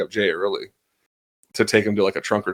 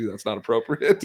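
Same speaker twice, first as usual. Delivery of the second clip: ordinary talk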